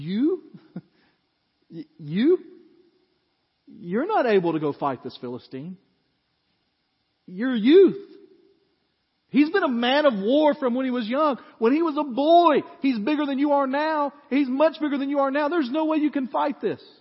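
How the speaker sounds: sneering, condescending disbelief. Retelling Saul's reply to David, acting Saul's sarcastic, condescending voice. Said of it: "you can just hear the sarcasm and the condescension in his voice".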